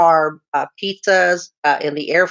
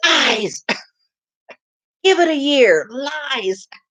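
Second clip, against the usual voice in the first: play-acted jeering shout, slow, "lies" stretched out; 8 semitones higher than usual. Showing what gets yelled at the TV during the show: yelling at the TV. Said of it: "I'll start yelling at the T V".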